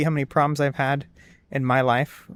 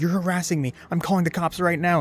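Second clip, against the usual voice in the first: put-on freaking out voice; 4 semitones higher than usual. Retelling how the cashier told the visitor to leave: imitating someone flipping out. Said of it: "flipping out".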